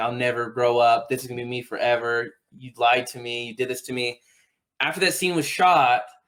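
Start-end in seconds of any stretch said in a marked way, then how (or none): none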